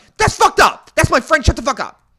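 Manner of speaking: very high-pitched, loud yelling. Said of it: "And so I yelled".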